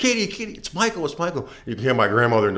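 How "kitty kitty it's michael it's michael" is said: thrilled shrieking, very high and excited. Retelling how she screamed to the grandmother on the phone, retelling a scream. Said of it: "you could hear the screams".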